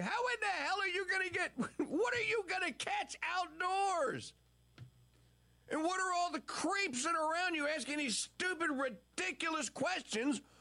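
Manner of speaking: put-on shrill, high, screaming rant. Recounting watching Biden on television, the speaker acts out screaming at the TV. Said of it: "I'm screaming at the television going".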